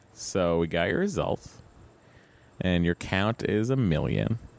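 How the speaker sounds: normal talking voice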